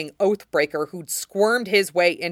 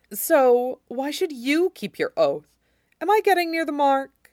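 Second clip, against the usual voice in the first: high-pitched, needling, mocking taunt; 9 semitones higher than usual. The oathbreaker questions the king about keeping his oath: mocking. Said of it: "He added mockingly".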